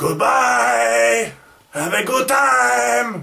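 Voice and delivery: shrill, slow, very loud, high fake Mexican accent. Signing off a video as a joke: put-on mexican accent. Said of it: "end this with a Mexican accent".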